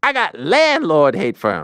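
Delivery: high, swooping comic delivery. Reading a comedian's monologue quote aloud, trying a Chris Rock impression. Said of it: "Let me see if I can imitate him".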